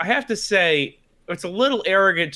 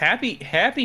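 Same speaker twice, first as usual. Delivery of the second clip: heavy stress on the word happy; 5 semitones higher than usual. Wishing the listeners a happy new year: stress on HAPPY. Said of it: "emphasis on the happy".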